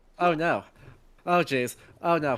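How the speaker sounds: flustered, dithering panic, low and drawn-out. Doing an impression of Blue as just panicking: imitating Blue panicking. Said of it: "That was the impression, is just panicking".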